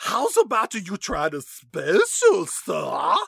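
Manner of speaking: put-on cartoon country girl voice. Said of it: "She almost sounds a little bit like that voice that Bugs Bunny used".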